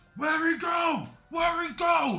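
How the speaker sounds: calling out. A game master voices an unseen figure, crying out. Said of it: "You hear a cry of".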